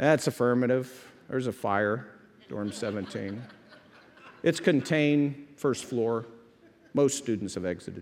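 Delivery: low, bored, matter-of-fact, put-on radio voice. Retelling a fire call made over the radio: imitating a bored radio voice. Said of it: "talk on the radio like I was bored".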